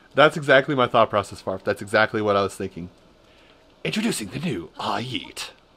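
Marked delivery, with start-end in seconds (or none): 3.9-5.5 grand, swooping, drawn-out announcer voice. Introducing a new product, in an announcer voice. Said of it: "I do the announcer voice every time a product comes into mind".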